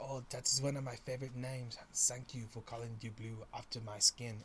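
really bad, fake German accent. Speaker imagines a blue pet answering about its name, in a really bad German accent. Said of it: "really bad German impression".

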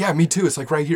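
sarcastic fake excitement. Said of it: "the eyes bulging and the excitement in my voice".

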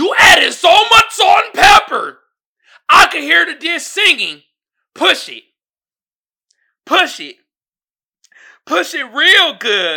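loud, high, angry chef rant. Reading a cooking meme aloud like Gordon Ramsay. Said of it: "I'ma read it like Gordon Ramsay".

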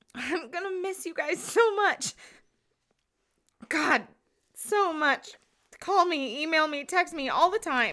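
weepy, tearful voice, crying through tears. Saying goodbye to a departing friend, crying while saying goodbye. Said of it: "Stop crying".

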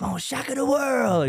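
hyped-up boasting yell.

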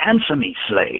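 furious, enraged, voice high. A man slams his fist on the table, demanding an answer: furious yelling. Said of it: "yelled furiously".

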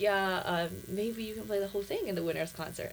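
ordinary talk, nothing marked

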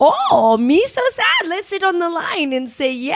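bad put-on Jamaican accent, sing-song. Showing how you'd voice a kids' character for your class, bad Jamaican accent. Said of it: "I can't even do the accent".

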